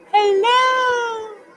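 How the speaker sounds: very high, loud, shrill, drawn-out voice. Imitating how Shay starts a live stream: imitating Shay starting a live stream. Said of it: "trying to do an impression of when she starts a live stream".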